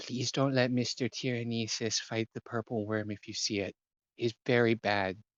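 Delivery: put-on hushed, secretive half-whisper. Voicing a character who pulls a player close: half-whispering in character. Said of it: "he'll kinda whisper to you".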